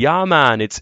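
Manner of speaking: put-on Jamaican accent. Retelling a car ad where a minnesota man speaks with a jamaican accent. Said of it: "spoke with a Jamaican accent".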